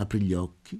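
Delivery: ordinary delivery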